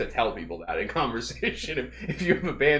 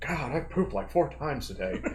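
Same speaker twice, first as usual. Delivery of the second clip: put-on voice of an elderly man; 2 semitones higher, 4 dB quieter than usual. Quoting a friend named Taylor, imitating Taylor's old-man voice. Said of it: "He sounds like an old man".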